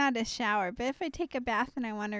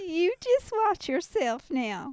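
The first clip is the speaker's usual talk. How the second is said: put-on old grandma voice, much higher pitched; 7 semitones higher, 4 dB louder than usual. Asked to talk like that again, a speaker answers in an old grandma voice. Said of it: "That sounds like grandma".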